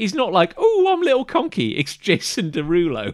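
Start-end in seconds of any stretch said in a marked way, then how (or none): 0.6-1.8 timid, tiny, very high cartoon voice. Describing a shy cartoon character before his big moment: shy little cartoon character voice. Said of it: "he talks a little bit like this".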